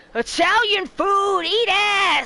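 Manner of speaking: mock very slow, high, drawn-out taunting tone. Imitating the one chef who smack-talks: imitating Kobe's smack talk. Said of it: "Kobe's just like".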